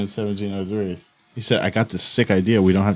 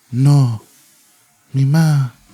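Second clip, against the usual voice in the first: put-on Spain-style Spanish accent, high and raised; 5 semitones higher, 8 dB louder than usual. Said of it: "Something like that".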